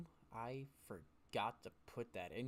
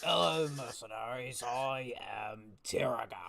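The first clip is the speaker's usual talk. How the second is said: put-on elderly half-orc character voice, raised; 6 dB louder than usual. Voicing an elderly half-orc who stands and greets the mercenaries: elderly half-orc voice. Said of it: "an elderly looking half orc ... he goes".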